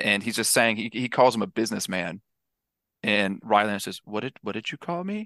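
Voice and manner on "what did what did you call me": creepy put-on voice, pitched higher and quieter. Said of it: "chew out Leonardo DiCaprio in such a creepy way".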